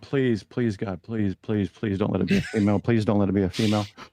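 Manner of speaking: frightened, pleading voice. Retelling silently begging while waiting for the doctor: retelling a frightened plea. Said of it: "'Cause I'm afraid".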